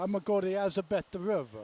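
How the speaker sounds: put-on Italian accent. Telling a childhood story, the speaker quotes his grandfather's answer in an Italian accent. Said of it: "with his Italian accent".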